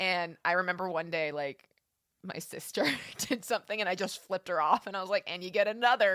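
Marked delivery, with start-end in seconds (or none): 5.3-6.2 put-on mumbled voice. Recalling flipping off a sister while unable to open the mouth; retelling mumbled words. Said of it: "but like in my mumbling voice".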